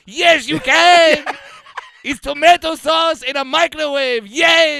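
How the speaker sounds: very high, loud, put-on Eastern European accent. Answering someone who says cooking is too complicated, in an eastern european accent. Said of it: "I'll say Eastern European".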